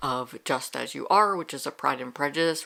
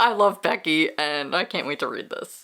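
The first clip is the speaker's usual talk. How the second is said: words spoken through laughter; 3 dB louder than usual. Introducing upcoming books to read: laughing.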